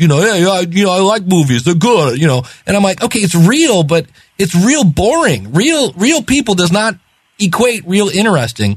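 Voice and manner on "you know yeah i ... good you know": put-on New York accent. Mocking a guy from a street conversation who talks like this, imitating a real New Yorker. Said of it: "He's a real New Yorker because he talks like this".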